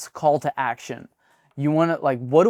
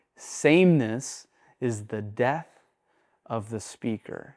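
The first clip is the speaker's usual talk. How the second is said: calmer, slowed-down, lower, less energetic delivery; 4 semitones lower, 4 dB quieter than usual. Showing how varying the voice wakes listeners up: slower, lower, less energetic voice. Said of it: "I just slowed my voice a little bit".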